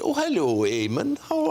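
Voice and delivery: put-on Welsh accent with voice pitched high. Retelling meeting Catherine Zeta-Jones outside a cafe, in her Welsh accent. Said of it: "And then Welsh accent".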